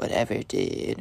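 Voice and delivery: muttered, barely whispered mumble under the breath. Retelling a classmate's reply to the teacher: imitating mumbling under his breath. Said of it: "Mumbles under his breath".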